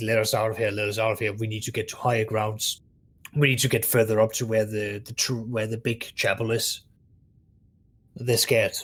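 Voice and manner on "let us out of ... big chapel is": normal talking voice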